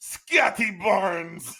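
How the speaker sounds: put-on thick European accent, loud and high. Retelling a coach's press conference, Darko Rajakovic thick European accent. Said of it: "he has that thick like European accent".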